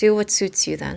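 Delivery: utterly composed, unruffled, very calm. Speaker retells her own reply to her, retelling in calmest voice. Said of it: "in the calmest voice".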